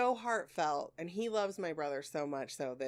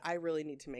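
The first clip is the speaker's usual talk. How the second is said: ordinary delivery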